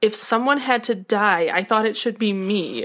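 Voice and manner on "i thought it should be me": ordinary talk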